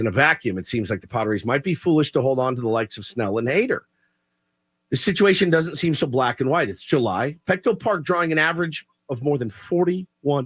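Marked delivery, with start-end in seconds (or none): none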